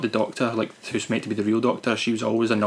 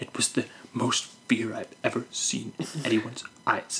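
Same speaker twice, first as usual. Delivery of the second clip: imitated whisper, quieter; 7 dB quieter than usual. Criticizing an actress's scene, the speaker quotes her line, mimicking her whispering. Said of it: "she's kind of whispering".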